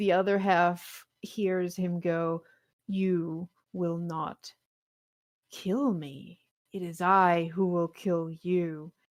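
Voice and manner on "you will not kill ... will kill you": really creepy, eerie, spooky ghostly voice. The game master voices a figure from the grave to half the party: really creepy voice. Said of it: "just really creepy sounding voice".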